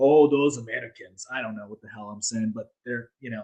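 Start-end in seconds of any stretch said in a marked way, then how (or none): 0.0-1.3 clumsy, bad, put-on Russian accent. Imitating how Russians look at Americans, in a bad Russian accent. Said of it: "I can't do a good Russian accent".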